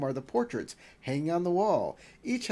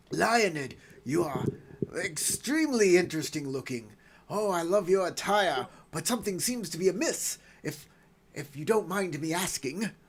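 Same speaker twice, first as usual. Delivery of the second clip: aristocratic, courtly nobleman character voice. Greeting the travelers in character: Duke Heinrich voice. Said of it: "I am Duke Heinrich".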